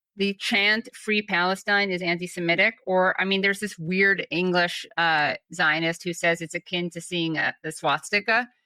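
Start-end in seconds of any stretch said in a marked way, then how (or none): none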